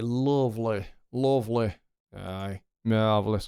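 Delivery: slow, slight West Yorkshire accent. Reacting to a take that went right: West Yorkshire accent. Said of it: "A bit of West Yorkshire accent there".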